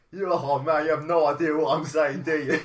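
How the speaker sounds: very loud, high-pitched put-on cockney accent. Retelling what a man said to him, in a cockney-sounding accent. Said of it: "was he a cockney?".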